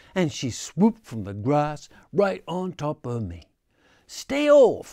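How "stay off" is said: very high, shrill, very loud screeching shriek. Narrator reads Muskrat answering Heron, screeching. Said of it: "screeched Muskrat".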